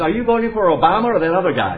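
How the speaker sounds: put-on, very energized voice. Recounting a phone call from a caller asking about voting, mimicking a very energized voice. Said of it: "A very energized voice says".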